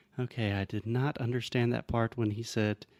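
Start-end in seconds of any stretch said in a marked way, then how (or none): none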